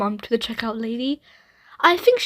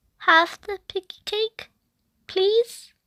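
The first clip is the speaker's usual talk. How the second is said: very small, tiny voice, pitched high; 9 semitones higher than usual. A narrator reads Ruby answering her mum, in Ruby's teeny, tiny voice. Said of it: "said in a teeny, tiny voice".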